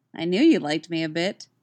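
plain reading voice

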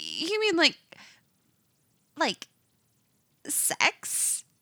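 high squeak, very slow and drawn out. A narrator reads a woman's reply, squeaking it out. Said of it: "She squeaks out".

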